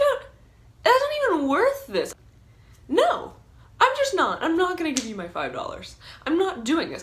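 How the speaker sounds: angry shouting, high and loud.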